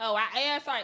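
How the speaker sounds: ordinary delivery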